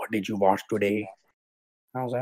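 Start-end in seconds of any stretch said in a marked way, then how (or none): 0.0-1.1 low, stern, suspicious dad voice. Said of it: "he'd come home from work and be like".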